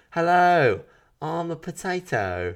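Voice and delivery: put-on very high, drawn-out cute little British child voice. Imitating the little potato characters: cute british kid accent. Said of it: "they had British accents ... They're like cute little British kid voices".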